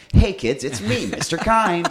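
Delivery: booming, shrill, high put-on American kids'-show voice. Retelling how you greeted the kids in a role, in an american accent. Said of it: "who could do an American accent".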